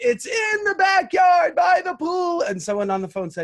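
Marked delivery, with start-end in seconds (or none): 0.0-2.4 long, very high, very loud, shrill drawn-out scream. Retelling answering a question while thinking the call was muted: imitating own scream. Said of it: "And I screamed".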